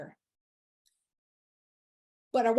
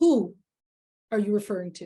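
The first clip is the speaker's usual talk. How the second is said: stern, loud delivery. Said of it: "asked the question very sternly".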